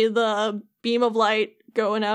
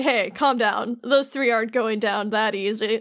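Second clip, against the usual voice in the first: ordinary delivery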